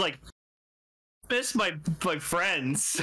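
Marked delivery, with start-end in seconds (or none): 1.3-3.0 slow, depressed, downcast, mopey longing. Retelling a fused hero missing his friends, imitating a depressed character. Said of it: "He's just so depressed".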